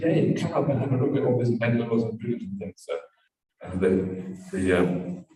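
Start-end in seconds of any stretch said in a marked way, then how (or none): none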